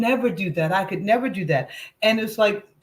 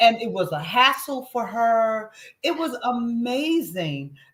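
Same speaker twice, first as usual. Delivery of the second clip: ordinary talk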